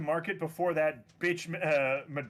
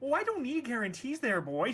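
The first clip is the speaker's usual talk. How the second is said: put-on Midwestern accent, pitched up, swooping pitch; 7 semitones higher than usual. Redoing another speaker's line to show how it should go: Midwestern accent. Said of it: "you should have gone with the Midwestern thing".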